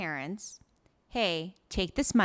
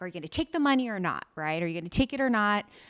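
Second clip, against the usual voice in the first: angry, furious screaming, acted out. Retelling a drama scene where a character screams at her parents: imitating a character screaming. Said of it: "So she's screaming at them, being like".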